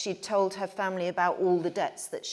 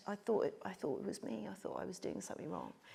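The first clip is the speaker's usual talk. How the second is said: tiny, very small, whispered little voice; 12 dB quieter than usual. Retelling what she answered when asked why: imitating a very small voice. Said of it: "in a very small voice".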